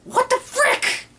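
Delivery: high, slow, outraged and incredulous outburst.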